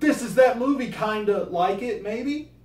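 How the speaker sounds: mock high, loud, pushy nostalgic sales pitch.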